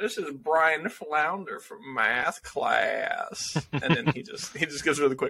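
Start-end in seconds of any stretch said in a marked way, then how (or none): 0.0-3.6 put-on very slow, thick Southern accent. Retelling how a prom date in the episode introduces someone: southern accent. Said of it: "a very southern accent".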